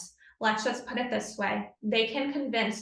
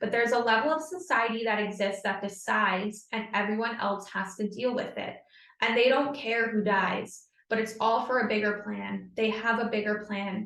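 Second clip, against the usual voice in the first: ordinary talk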